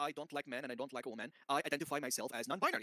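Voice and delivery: ordinary talk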